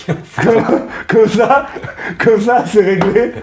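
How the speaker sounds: high, loud, gleeful laughing voice.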